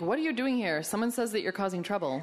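ordinary delivery

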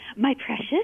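put-on creature voice. Retelling family chiming in around the house, in a Gollum voice. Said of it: "I also want to hear your Gollum voice".

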